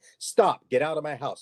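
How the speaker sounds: loud yell. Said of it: "yelling so loud".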